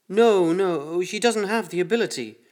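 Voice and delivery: terrified, long drawn-out no. The doctor answers the laughing voice behind the door, terrified. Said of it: "The doctor's voice was terrified".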